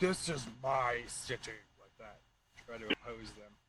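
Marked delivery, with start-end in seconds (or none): 0.0-1.5 very slow, booming, resounding voice. Playing a game character, the speaker tries to intimidate opponents: booming voice. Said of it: "that booming voice I used before".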